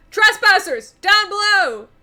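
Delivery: shrill, high, very loud shout. Voicing someone above a wall spotting the party below: shouting. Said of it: "you hear someone shout".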